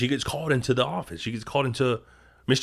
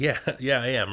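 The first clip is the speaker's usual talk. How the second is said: talking through put-on laughter. Retelling a secretary answering her boss: imitating someone laughing while talking. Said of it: "She's laughing".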